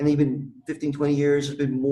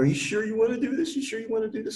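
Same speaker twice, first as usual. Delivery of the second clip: mock tearful crying voice, pitched higher; 8 semitones higher than usual. Retelling the mother's words as she came out: imitating someone crying. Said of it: "My mom comes out crying, going".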